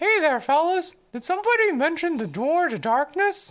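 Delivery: dopey, stupid-sounding cartoon mouse character voice. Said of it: "I can do a stupid Mickey Mouse voice though".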